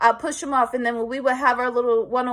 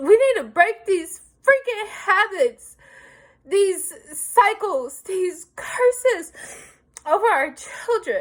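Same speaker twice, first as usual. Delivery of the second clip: tearful, pitched-up voice, crying through the words; 7 semitones higher than usual. A parent speaking to listeners addressed as y'all, crying. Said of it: "I'm gonna tell y'all why I'm crying".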